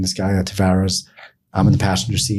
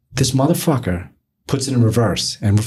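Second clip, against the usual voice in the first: usual speaking voice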